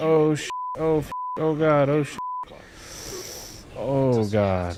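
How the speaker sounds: very slow, high, drawn-out, panicked, broken-off cries. Surviving a near-death moment in a hardcore game run: panicking. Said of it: "f***ing panicking".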